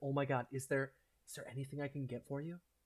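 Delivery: ecstatic, thrilled, overjoyed excited voice. Voicing an ecstatic fan meeting someone she adores: ecstatic fan voice. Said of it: "she is just ecstatic".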